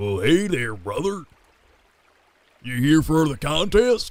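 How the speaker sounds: big man voice. Voicing a very large shirtless man greeting the player at a contest: voicing a large shirtless man. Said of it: "this man walks up to you and he goes".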